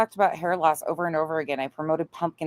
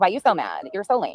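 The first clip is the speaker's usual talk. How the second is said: put-on valley girl speech; 3 semitones higher than usual. Acting out an adult child who walked by: valley girl voice. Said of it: "talking like a valley girl?".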